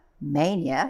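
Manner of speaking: "mania" stressed with a rising pitch.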